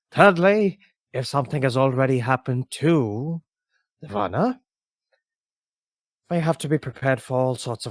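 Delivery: whispered character voice. Voicing a character who whispers warnings to a player while walking outside: NPC whispering. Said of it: "whispers to you".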